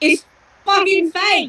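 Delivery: high yell in character. Voicing a character who reaches into a cell and finds an illusion: yelling in character. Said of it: "I'm gonna yell out".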